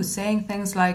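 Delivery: plain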